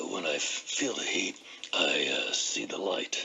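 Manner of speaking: put-on very low, deep, gravelly old senator voice. Quoting an old saying for listeners, the speaker does a gravelly Dirksen impression. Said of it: "with his gravelly cigarette uh, affected voice".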